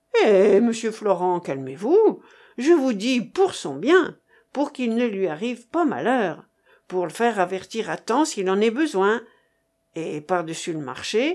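usual speaking voice

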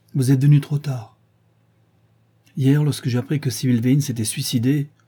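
plain reading voice

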